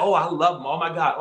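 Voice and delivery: ordinary delivery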